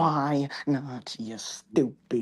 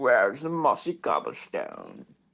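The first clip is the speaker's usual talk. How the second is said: put-on British accent, laid on, slow and swooping; 4 semitones lower than usual. Imitating the other speaker's best impression: imitating a british accent. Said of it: "it's like the British".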